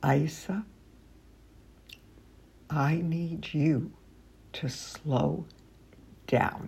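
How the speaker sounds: calm, unhurried, very quiet, with pauses. Showing how to tell a running child to slow down: calm, slow, low voice with pauses. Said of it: "in a calm voice, speaking slowly ... so calmly and so slowly and with pauses and a low voice".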